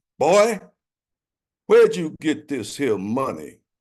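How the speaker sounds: mock booming voice. Retelling buying candy as a boy, the speaker quotes Mister Charles's booming voice. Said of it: "he said in his booming voice".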